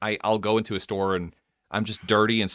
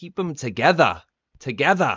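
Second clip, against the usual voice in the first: put-on English accent; 5 semitones higher, 3 dB louder than usual. Quoting a line from Tom's video to friends, imitating Tom's English accent. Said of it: "that that's an interesting English accent".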